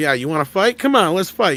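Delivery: put-on playful taunting tone. Showing how someone goofing around might sound: imitating a joking fight challenge. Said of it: "if you're goofing around, you're almost gonna sound like that".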